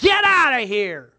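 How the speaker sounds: very loud, high-pitched, furious shout. Recounting a street encounter, voicing the other man: retelling a man's yell. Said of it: "and yelling".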